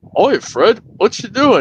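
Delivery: drawn-out, high-pitched cartoon voice. Doing a random impression while the other speaker grabs something: Flintstones impression. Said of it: "this impression I'll do".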